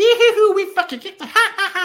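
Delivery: mock very high, loud, cackling hyena laugh. Acting out how a man recounts the experience, imitating him laughing like a hyena. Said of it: "He's like laughing like a hyena".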